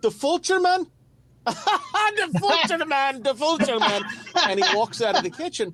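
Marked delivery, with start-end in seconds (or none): 0.0-4.0 very high, slow German man voice. Retelling a scene in a kitchen, the speaker imitates a german man's reply. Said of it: "you hear the German guy go".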